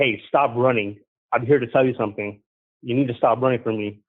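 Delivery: ordinary talk, nothing marked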